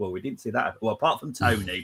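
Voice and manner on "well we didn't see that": put-on giggling, disbelieving laughter. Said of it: "we were all giggling, going".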